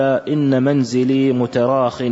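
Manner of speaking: ordinary talk, nothing marked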